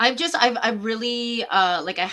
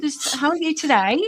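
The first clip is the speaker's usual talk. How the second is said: loud, pitched-up put-on English accent; 8 semitones higher, 4 dB louder than usual. Describing how they greet people, slipping into an english accent. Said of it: "go into my English accent".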